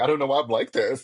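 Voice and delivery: mock bawling, crying man voice. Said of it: "he was bawling".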